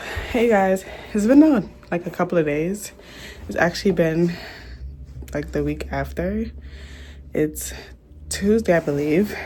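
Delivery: out of breath, catching breath. Vlogger greeting viewers after a week of work, out of breath. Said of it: "I'm catching my breath".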